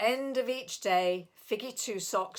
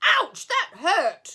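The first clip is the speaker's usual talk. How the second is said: big, loud growl; 11 semitones higher, 11 dB louder than usual. Reading a story aloud, the narrator voices the hurt bear: great big growling voice. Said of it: "growled a great big voice".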